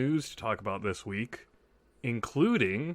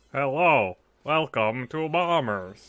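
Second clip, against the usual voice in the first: loud robotic speech-synthesizer voice; 6 dB louder than usual. Podcast host opening the episode, in an Intellivision speech synthesizer voice. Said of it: "Am I using the synthesis module?".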